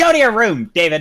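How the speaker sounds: acted entitled character voice. Acting out a scene with a friend, answering back in a Karen voice. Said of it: "the Karen voice is really hard".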